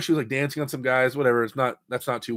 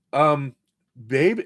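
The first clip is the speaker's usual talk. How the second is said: ordinary talk, nothing marked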